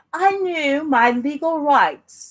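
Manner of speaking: put-on refined, classy accent. Watching a Twitter video, the speaker repeats the woman's words; imitating Karen's classy accent. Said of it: "Karen sounds really classy with that accent".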